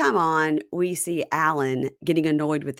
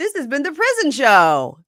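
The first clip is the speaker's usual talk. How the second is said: goofy show-off voice, high, loud, swooping, sing-song; 10 semitones higher, 7 dB louder than usual. Describing Emmanuel in prison on camera, imitating Emmanuel goofing for cameras. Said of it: "acting real goofy for the cameras".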